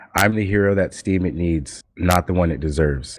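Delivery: plain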